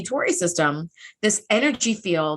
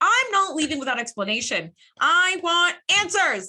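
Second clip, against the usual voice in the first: put-on pouty voice, higher; 9 semitones higher than usual. Retelling a captain refusing to leave without explanation: imitating a pouty Picard. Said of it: "He is being very pouty".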